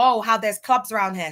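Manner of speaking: plain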